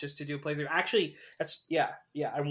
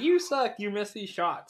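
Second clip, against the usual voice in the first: put-on mocking, taunting dog voice; 6 semitones higher, 3 dB louder than usual. Retelling how the dog in a childhood game taunted the player, acting out a mocking dog. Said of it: "he's mocking you that whole game".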